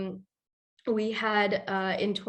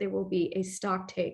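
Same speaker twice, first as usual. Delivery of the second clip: ordinary talk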